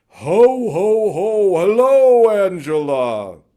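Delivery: full-blast, very high, slowly stretched, very loud call. Retelling standing up as Angela walks in, in the loudest Santa Claus voice. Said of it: "in my loudest Santa Claus voice".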